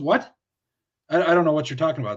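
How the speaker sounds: put-on stuttering. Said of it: "it made him stutter back".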